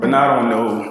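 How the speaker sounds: normal talking voice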